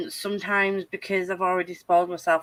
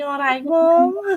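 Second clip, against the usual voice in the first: loud, annoying, put-on Scouse accent; 8 semitones higher, 7 dB louder than usual. Teasing their mum on purpose, speaking in a Scouse accent. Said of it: "My mum hates a Scouse accent".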